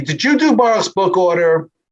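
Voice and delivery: high yelling voice. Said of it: "my wife from the second floor yells down to me".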